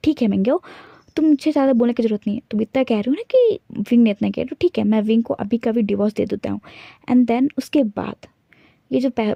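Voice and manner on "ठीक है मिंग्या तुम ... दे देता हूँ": usual speaking voice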